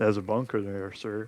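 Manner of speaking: low, quiet fake American accent with heavy R's. Narrating a player's move, the speaker voices him in a put-on American accent. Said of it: "That's my American".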